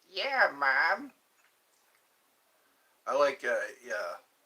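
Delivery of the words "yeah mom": slow, drawn-out cartoon kid character voice. Explaining who voices Family Guy characters, the speaker does the Family Guy kid voice. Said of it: "The guy who talks like this".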